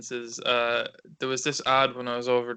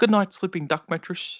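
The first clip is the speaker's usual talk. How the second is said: high put-on New Zealand accent; 6 semitones higher, 4 dB louder than usual. Retelling how a brother quotes the mattress ad: imitating a kiwi accent. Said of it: "he'll just randomly come up to me and be like".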